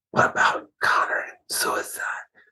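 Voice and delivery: hushed, barely voiced whisper. Retelling what a young lady at Casey's asked: imitating someone whispering. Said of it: "She whispered".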